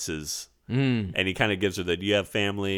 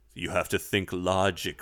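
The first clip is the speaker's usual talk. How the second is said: mock serious broadcaster voice. Imitating Richard Franz pleading on TV during the breakdown: imitating Richard Franz. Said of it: "Richard Franz is the guy that's just going".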